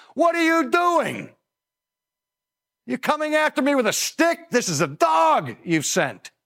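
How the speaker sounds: very high, insulted, incensed, jeering scorn. Retelling a story, acting out a character's taunt with mock-incensed scorn. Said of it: "Goliath is incensed by this".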